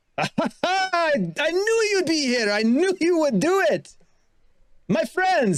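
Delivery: very high, slow, drawn-out hailing shout. Game narrator voices the party's contact calling to them from a boat, shouting a greeting. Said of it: "as he sort of he shouts to you".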